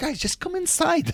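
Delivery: mock very high calling-out shout. Retelling calling to the team to come inside during a game, retelling a shout. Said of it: "And I'm like shouting".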